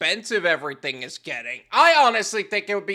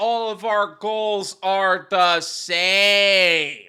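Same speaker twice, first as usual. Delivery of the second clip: very slow, spelled-out delivery. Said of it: "say it slower for the slow people".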